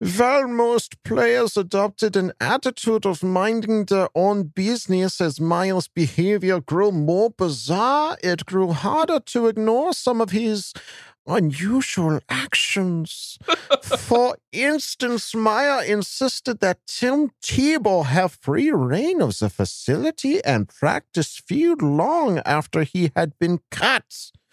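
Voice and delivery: fake German accent, high. Reading an article about Urban Meyer aloud on request, in a put-on German accent. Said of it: "Kevin requested that I use my German voice".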